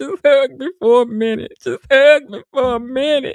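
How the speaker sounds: mock sobbing, high and loud. Picturing telling an officer how scared they were, mock crying. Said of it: "I'd be busting out crying".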